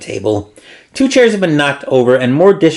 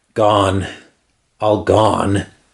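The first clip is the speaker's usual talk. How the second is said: shaking, trembling, barely steady, hard-to-make-out voice; 6 semitones lower, 3 dB quieter than usual. Reading a dazed captain's words to the party: trembling voice. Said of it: "His voice is trembling".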